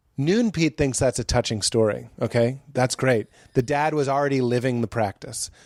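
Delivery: normal talking voice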